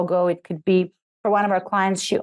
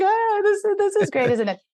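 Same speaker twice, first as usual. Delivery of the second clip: mock touched, emotional voice; 12 semitones higher than usual. Retelling reading a bio to clients, imitating own emotional reaction. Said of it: "I get really emotional".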